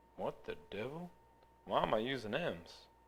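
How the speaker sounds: poor cartoon character voice. Catching a mistake while working a math problem, Goofy voice. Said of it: "That was my impression of Goofy".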